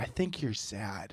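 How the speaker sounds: hushed, very soft, slow, deliberate smartwatch-like voice. Joking about a depression notification on a watch: Apple Watch voice. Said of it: "your Apple Watch is like".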